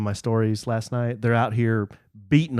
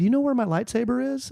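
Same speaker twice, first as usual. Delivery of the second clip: mock polite child voice, pitched higher; 13 semitones higher than usual. Retelling how a patient eleven-year-old asks his dad: imitating a polite kid. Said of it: "the most patient and polite eleven-year-old".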